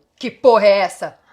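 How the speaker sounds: very loud, booming, deep, low-voiced yell. Narrator reads a voice from someone hidden in a bush; deep voice shouting. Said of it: "Uma voz grave gritando".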